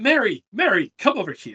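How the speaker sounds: loud, high call, projected far.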